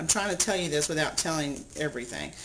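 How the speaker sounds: usual speaking voice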